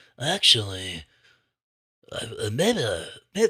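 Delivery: halting, um-ing, wavering, swooping sing-song delivery. Retelling a friend's suggestion for a matchup: imitating Tristan. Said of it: "this is my Tristan impression".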